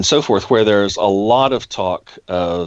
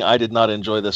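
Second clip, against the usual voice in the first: ordinary delivery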